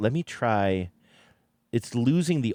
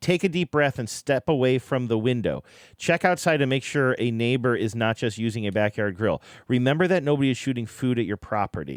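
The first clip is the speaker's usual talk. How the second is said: ordinary talk, nothing marked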